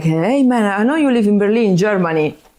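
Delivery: put-on heavy, laid-on, strongest southern Italian accent. Retelling an Instagram message from a man in a small Italian town, strong South Italian accent. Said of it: "imagine like the strongest Italian, South Italian accent".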